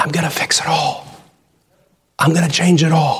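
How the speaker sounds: hushed whisper. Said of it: "he's whispering to us".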